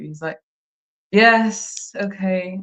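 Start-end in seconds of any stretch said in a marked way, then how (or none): 1.1-2.6 put-on flat, bored, can't-be-bothered, patronizing tone. Describing how a man talks to you: imitating patronizing tone. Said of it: "he just can't be bothered to talk to you... really patronizing".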